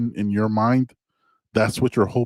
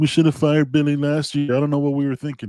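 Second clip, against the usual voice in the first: put-on sad voice pitched higher; 4 semitones higher than usual. Mocking sad fans of a rival team: mocking Gator fan voice. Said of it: "that's my Gator voice".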